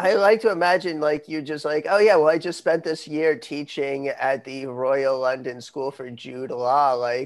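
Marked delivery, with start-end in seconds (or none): none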